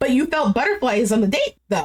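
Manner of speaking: ordinary talk, nothing marked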